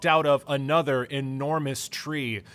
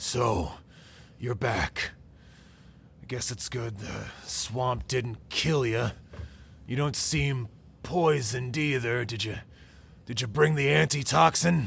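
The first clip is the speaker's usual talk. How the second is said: growly voice, growling throughout; 2 semitones lower than usual. Narrating as Mayor Pike greets the group back from the swamp, growly voice. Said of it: "says in his growly voice".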